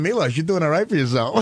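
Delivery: plain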